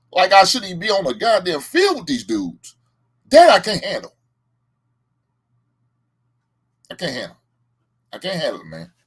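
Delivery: high, swooping, upset, angry venting rant. Bears fan rants after his team lost, angry, upset ranting. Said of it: "I'm pissed and I'm mad because my Bears lost".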